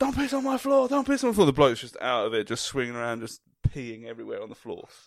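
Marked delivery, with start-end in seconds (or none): 0.0-1.5 loud yell, pitched high. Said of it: "He's literally like".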